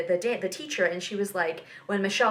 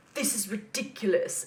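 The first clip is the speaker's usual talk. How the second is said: imitated British accent; 3 dB quieter than usual. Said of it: "That in the British accent sounds so great".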